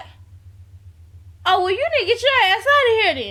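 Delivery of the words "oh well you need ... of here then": high, fast, incredulous dismissive tone. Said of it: "Scrappy looked at him in disbelief like".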